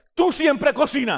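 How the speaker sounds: sounding angry. Demonstrating how a spanish phrase can start a fight, saying it in an angry tone. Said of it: "con un tono enojado".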